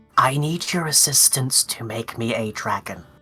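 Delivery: hushed, secretive whisper. Leaning in and cupping a hand to say a secret request: whispering into someone's ear. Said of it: "cup the other side of my mouth with, like, opposite his ear and say".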